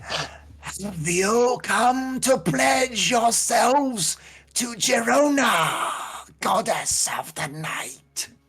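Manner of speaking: very high, loud, shrill, rasping monster voice. Narrator voices a creature addressing the group; raspy creature voice. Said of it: "And its raspy voice".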